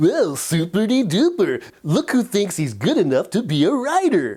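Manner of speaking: put-on children's TV dinosaur character voice. Talking to writers about their inner critic, doing a Barney the dinosaur voice. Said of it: "what if your inner critic became Barney the dinosaur".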